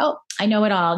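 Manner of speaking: ordinary delivery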